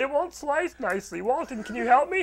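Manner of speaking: put-on mocking voice. Acting out what another speaker said this morning: mocking voice of Jonathan. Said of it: "of this mocking voice?".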